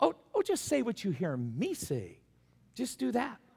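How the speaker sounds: put-on sugary, fake-nice sweet voice. Retelling a mother answering her young boy in front of guests, mock-sweet.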